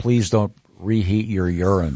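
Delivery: plain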